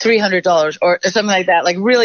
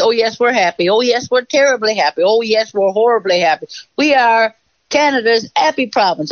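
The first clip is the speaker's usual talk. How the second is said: sarcastic, mocking, satirical send-up delivery; 4 semitones higher than usual. Retelling a comedy sketch that made fun of Newfoundlanders: mocking Happy Province sketch. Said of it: "we were doing sketches like the Happy Province".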